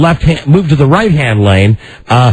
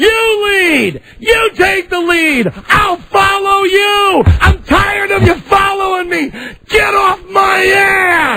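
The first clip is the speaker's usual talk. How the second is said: put-on yelling, pitched higher. Retelling yelling at a driver who kept following him: retelling his own yell. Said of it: "I'm yelling and I said".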